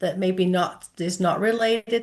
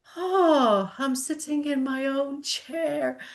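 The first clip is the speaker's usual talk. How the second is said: moved, near-tearful, high, slow emotional voice; 7 semitones higher than usual. Retelling what a patient said after being moved: imitating someone getting emotional. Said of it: "he got all emotional going".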